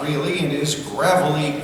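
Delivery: ordinary delivery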